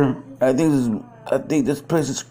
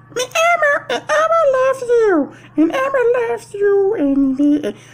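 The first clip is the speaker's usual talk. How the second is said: put-on puppet monster character voice. Trying out voices with a friend, speaker tries a new one: Elmo voice. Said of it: "What the hell, Elmo?".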